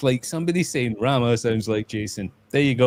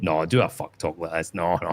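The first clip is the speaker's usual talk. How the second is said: put-on posh Scottish accent, much lower; 6 semitones lower than usual. Retelling what he admitted on a stream, in a posh Scottish accent. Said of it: "He was doing posh Scottish".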